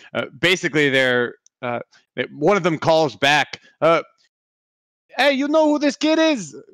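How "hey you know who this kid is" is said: put-on pitched-way-up Bronx accent. Voicing a pursuer calling back about the kid: Bronx accent. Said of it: "that changed the accent completely. ... it's like the Bronx".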